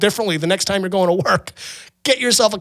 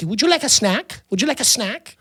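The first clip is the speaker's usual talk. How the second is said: very cute, sweet-toned voice; 3 semitones higher than usual. Retelling how the waiters at a cafe offered a snack: imitating waiters saying it cutely. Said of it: "they say it very cutely".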